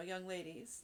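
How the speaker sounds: ordinary delivery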